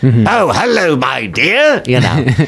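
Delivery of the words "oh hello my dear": passable put-on English accent, high and slow. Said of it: "a passable high school English accent".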